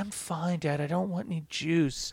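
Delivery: soft, raspy, sultry, seductive voice. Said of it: "She has like a raspy voice".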